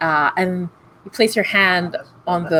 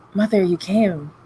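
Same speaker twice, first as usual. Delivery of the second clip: whispered; 3 semitones higher than usual. Narrating a story, the speaker voices what the hell says to mother, in a whisper. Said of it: "the hell just whispers".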